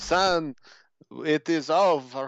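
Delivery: fake German accent, laid on thick. Game character addressing someone as son in a cutscene, put-on german accent. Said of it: "putting on a German accent".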